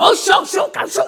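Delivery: noisy, unintelligible babbling. Act out a male deacon at your church speaking in tongues, imitating noisy Chinese-sounding tongues. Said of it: "중국 방언을 어간 시끄럽더라고요".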